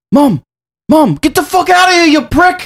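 put-on British man screaming. Retelling a British gamer screaming at his mom over TeamSpeak: imitating a British man screaming.

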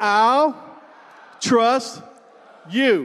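loud, heartfelt delivery.

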